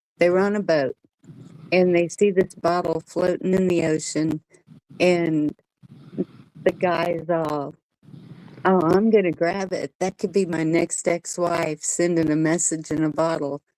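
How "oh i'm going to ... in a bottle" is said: ordinary talk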